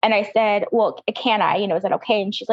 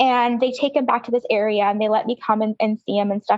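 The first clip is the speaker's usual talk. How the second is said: normal talking voice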